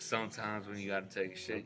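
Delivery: put-on movie-star voice, low, soft, laid-back. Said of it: "So that is your Matthew McConaughey".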